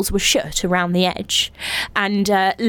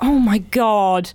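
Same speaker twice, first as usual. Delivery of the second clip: slow, unsympathetic scoff. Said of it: "was so unsympathetic".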